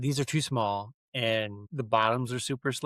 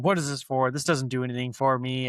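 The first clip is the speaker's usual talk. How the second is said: usual speaking voice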